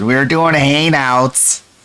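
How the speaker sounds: imitated put-on Southern accent. Mocking someone's fake southern accent, dropping the g: mocking a fake southern accent. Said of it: "the fake Southern accent, where she thinks".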